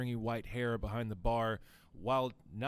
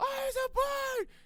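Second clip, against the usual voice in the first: put-on very high, shrill, excited squealing child yell; 4 dB louder than usual. Retelling kids running up to a bard's wagon, imitating kids screaming excitedly. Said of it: "just yelling and screaming excitedly".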